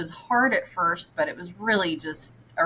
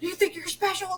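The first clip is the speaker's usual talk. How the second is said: play-acted drill-sergeant scream, shrill and very high; 13 semitones higher than usual. Retelling how a man started screaming at you for taking the stairs, retelling a scream. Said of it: "He started screaming at me".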